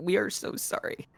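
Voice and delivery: muttered under breath. Speaking in character to a dragon, apologizing: quietly to oneself. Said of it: "I quietly say to myself".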